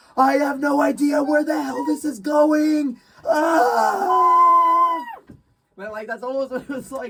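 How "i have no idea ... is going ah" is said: high, loud, slow terrified scream. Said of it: "You were almost screaming".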